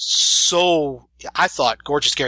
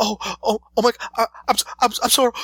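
put-on high, shocked, panicked, terrified stammering; 8 semitones higher than usual. Retelling a stranger's reply after a mistake: imitating someone shocked and terrified. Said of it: "This look of shock and terror".

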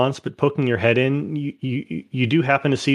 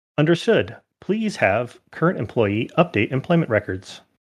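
robotic, machine-like feminine computer voice. Voicing a system that answers the company employees, in a robotic feminine voice. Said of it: "a kind of robotic but feminine voice".

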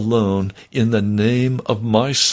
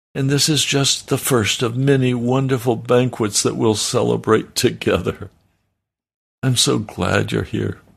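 usual speaking voice

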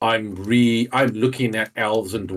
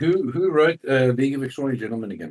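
sarcastic, mock-innocent tone, pitched higher; 4 semitones higher than usual. Answering another speaker's complaint about a writer's hypocrisy: sarcastic question. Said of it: "I'm being sarcastic".

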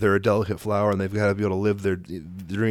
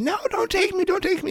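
put-on kid scream, shrill and very high. Retelling a kid screaming while being dragged to the car: imitating Tempe screaming. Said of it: "she's screaming at the top of her lungs".

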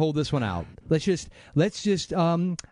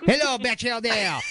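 bad, fake French accent, pitched up; 6 semitones higher than usual. Greeting a newly introduced guest on the stream: bad French accent. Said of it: "your name is so much fun to say with a bad French accent".

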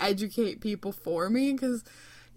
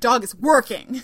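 put-on feisty tone, louder; 9 dB louder than usual. Retelling how a visiting friend confronts staring strangers: imitating a feisty friend. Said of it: "She's really feisty".

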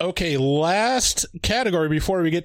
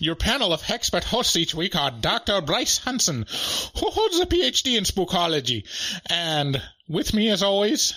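put-on Irish brogue; 3 semitones higher than usual. Asked by a co-host to do it again, reading the show intro in an Irish accent. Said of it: "You can do it again. I demand it".

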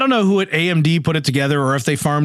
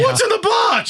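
mocking impression, pitched much higher. Describing live bloggers reacting to a box, mocking Brad Pitt impression. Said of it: "But mockingly so".

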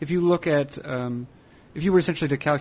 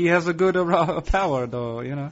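put-on Italian accent. Discussing a player, the speaker repeats a remark in a fake Italian accent. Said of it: "I don't know why I said that like a fake Italian".

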